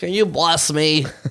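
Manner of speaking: slow, drawn-out homeless beggar voice. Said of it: "I like your homeless voice".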